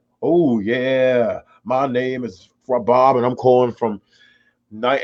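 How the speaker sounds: slow voiceover announcer voice, stretched "yeah". Imitating a regular radio caller who always calls in: imitating Bob, a caller, voiceover-actor style. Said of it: "He's almost like a voiceover actor".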